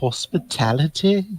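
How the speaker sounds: hushed half-whisper with strongly rising intonation. Leaning in, a character half-whispers, a half-whispered question. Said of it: "Kar's just gonna lean in and whisper".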